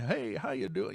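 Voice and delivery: put-on weathered old rancher voice. Retelling an interview greeting from a ninety-one-year-old guest: imitating Bob Gimlin. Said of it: "he's like the old rancher".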